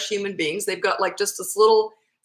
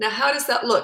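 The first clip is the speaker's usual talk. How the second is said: plain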